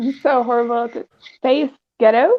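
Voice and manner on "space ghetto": attempted, put-on American accent. Asked to say a phrase in another accent, trying a put-on American accent.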